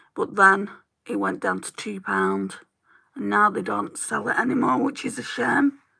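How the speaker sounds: hoarse, creaky voice giving out.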